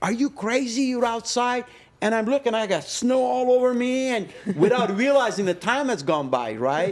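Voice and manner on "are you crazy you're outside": put-on shrill, very high, scolding scream. Telling a cigar story, the speaker acts out the wife's outburst, imitating wife screaming. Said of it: "my wife screaming at me".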